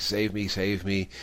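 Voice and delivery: ordinary delivery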